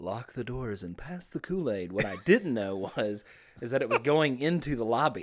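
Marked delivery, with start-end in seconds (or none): 0.0-1.9 eerie, creepy, hushed half-whisper. Retelling what he half-whispered to Chip at an early service, a creepy half-whisper. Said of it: "And I was like whispering".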